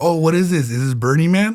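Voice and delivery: ordinary talk, nothing marked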